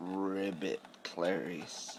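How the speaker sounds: very quiet, soft, hushed voice under the breath, close. Trying out animal sounds with another speaker, say the frog's ribbit as a Hannibal Lecter impression. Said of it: "just like a Hannibal Lecter".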